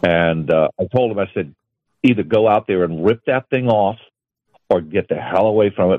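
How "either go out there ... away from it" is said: normal talking voice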